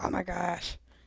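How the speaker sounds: put-on creature-feature monster voice. Finishing a fun puzzle and exclaiming: monster voice. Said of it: "the monster voice comes out and I'm like".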